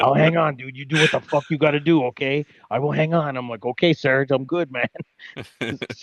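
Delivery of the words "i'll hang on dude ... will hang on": put-on strong, hardcore French accent. Speaker retells what a French guy told him, Serge's French accent. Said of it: "really hardcore French".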